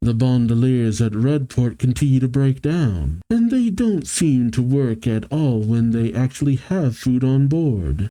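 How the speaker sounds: ordinary delivery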